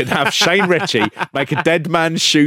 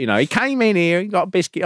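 terrible put-on northeastern English accent; 3 semitones higher than usual. Recounting an old lady shown on the news, speaker imitates her: terrible northeastern accent. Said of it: "I did a terrible northeastern accent there".

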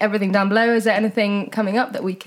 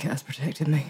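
sinister voice, much lower and quieter; 6 semitones lower, 7 dB quieter than usual. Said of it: "In that voice, it's so sinister".

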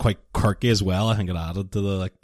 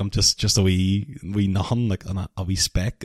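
usual speaking voice

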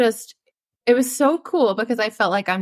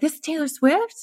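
put-on cute, high little girl voice; 7 semitones higher than usual. A mother retells how her daughter named singers on the radio, imitating her little girl voice. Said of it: "just in like her little girl voice".

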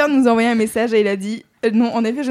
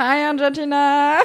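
put-on, mocking Valley Girl accent; 3 semitones higher than usual. Repeating another speaker's greeting back in a Valley Girl voice. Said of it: "Pourquoi t'as une voix de Valley Girl ?".

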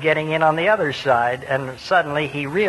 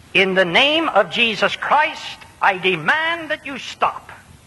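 lilting, higher-pitched Irish brogue; 6 semitones higher than usual. Retell what a quick-minded man who had preached said, in Charlie Robshaw's Irish brogue. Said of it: "in his Irish brogue he said".

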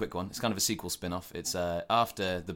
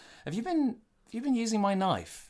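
high, put-on annoyed voice. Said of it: "the guy's like".

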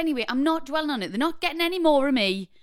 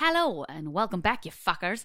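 bad attempted Australian accent, lower pitch; 6 semitones lower than usual. Welcoming listeners back to the episode: attempted australian accent. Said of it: "that was supposed to be Australian".

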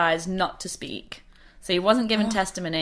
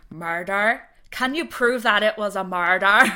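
imitated Irish accent; 3 dB louder than usual. Repeating someone's reply the way he would have said it, in an Irish accent. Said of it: "he would have said it in an Irish accent".

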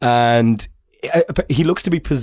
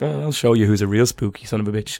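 ordinary talk, nothing marked

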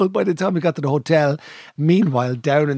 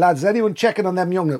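usual speaking voice

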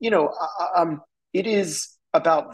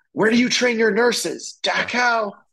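sudden shouted outburst, pitched up; 6 semitones higher than usual. Retelling a film's hallway scene where he yells at a woman, imitating someone yelling. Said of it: "and he yells at her".

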